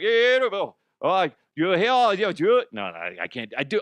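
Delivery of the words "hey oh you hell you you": loud, high-pitched, botched, goofy fake Cajun accent. Speaker imitates a man saying stuff in his accent: bad cajun accent impression. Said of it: "I don't even know what a Cajun accent sounds like".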